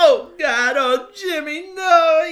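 very high, very loud, slow, drawn-out wail. Retelling a movie scene where the dad unmasks Jimmy: imitating someone bawling. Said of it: "He's, like, bawling".

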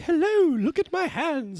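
nice good witch voice, very high and very slow. Contrasting how good and evil witches sound, showing a good witch: good witch voice. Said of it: "good witches sound like".

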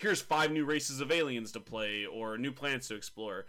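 ordinary talk

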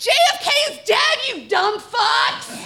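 high, drawn-out, taunting scream. The narrator, backing out the door with a prop gun, fires blanks and screams. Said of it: "and screamed".

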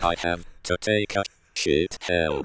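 put-on mechanical robot voice. Joking with a co-host about how a robot would speak, robot voice. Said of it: "the robot voice being like".

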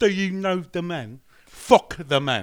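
booming, loud, slow fake British accent. Redoing the joke quote after a failed first try: put-on British accent, second try. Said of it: "sounded not like a British person".

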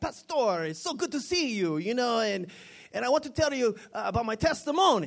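put-on very thick, laid-on Latin American accent. Retelling a man at the speaker's community gym, in a thick latin accent. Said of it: "he's got a really, really thick accent".

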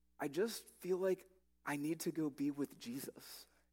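put-on stuttering, stammered words. Retelling a friend's flustered answer about leaving: imitating a stutter. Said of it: "he kinda stutters and he goes".

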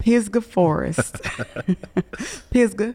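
Pisgah Forest said in a local country accent. Saying a north carolina place name the way locals say it; country accent. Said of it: "I feel like I need to say it with a country accent".

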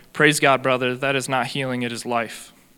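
ordinary talk

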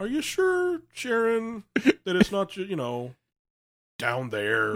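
high, swooping, slow and drawn-out delivery. Acting out a South Park scene about menopause: Randy impression. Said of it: "I like your Randy".

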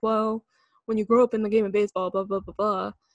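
mock dismissive, can't-be-bothered brush-off. Retelling how the Rangers manager brushed off a grand slam: imitating the Rangers manager, eye-rolling. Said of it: "He said it like".

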